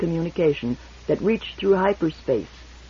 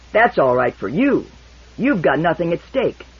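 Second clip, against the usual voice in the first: snarling, snarled delivery; 4 dB louder than usual. Narrator reading a character's retort across the table, snarling. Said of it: "he snarled, glowering".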